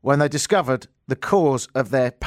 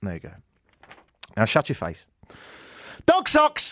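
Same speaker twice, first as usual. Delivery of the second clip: ordinary talk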